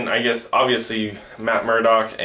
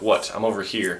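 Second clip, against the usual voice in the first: mock cold dismissive tone, quieter; 2 semitones lower, 4 dB quieter than usual. Retelling a scene from a show: imitating a cold, dismissive tone. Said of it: "giving him the cold shoulder".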